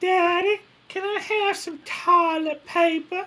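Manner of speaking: put-on very high, drawn-out little-girl southern drawl. Retelling how a daughter asked for something, imitating a Southern drawl. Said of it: "My daughter did it when she was younger".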